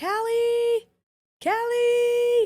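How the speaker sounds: put-on very high, loud yell, stretched and drawn out. Retelling being lost at night with only a flashlight, retelling yelling a name. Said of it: "I just start yelling".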